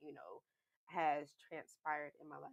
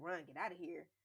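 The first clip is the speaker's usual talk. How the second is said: imitated screaming; 2 semitones higher than usual. Retelling being attacked and telling a friend to flee: retelling own scream. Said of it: "I'm screaming, like".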